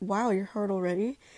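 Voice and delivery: playful teasing delivery. Speaker retells the joke they made to him, retelling a joking remark. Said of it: "I joke about it".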